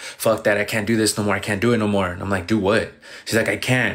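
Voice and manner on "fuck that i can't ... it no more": mock-crying, acted tearful outburst. Retelling how a woman stormed in, imitating someone crying. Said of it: "And she's crying".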